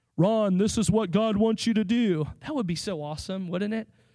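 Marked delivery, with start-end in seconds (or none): 0.2-2.3 loud, thundering, booming voice, like from above. Speaker explaining how God usually speaks, demonstrating in a loud booming God voice. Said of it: "loud, booming voice".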